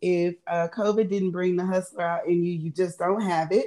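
ordinary delivery

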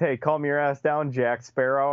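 ordinary delivery

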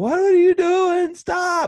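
very loud, very high, drawn-out scream. Retelling a fight up in a tree, the speaker reenacts screaming at him. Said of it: "I'm screaming".

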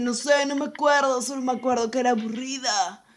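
clueless, empty-headed, dopey dimwit drawl. Quoting Brian answering questions about the movie: imitating Brian's idiot voice. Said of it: "esa voz de pelotudo".

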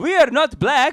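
Saudi prince voice, belted high and loud. Imagining how a Saudi prince would react, doing a Saudi prince impression. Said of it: "I love that in your impression".

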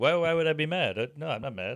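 quiet, soft mumble under the breath. Retelling what the man doing their makeup said, imitating a mumbly, quiet guy. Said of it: "he's all mumbly and quiet".

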